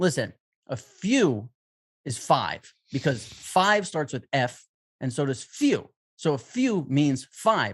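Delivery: dead-serious, very earnest lecturing tone. Retelling how a man explained number words: mock-serious explaining. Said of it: "So in a very serious way".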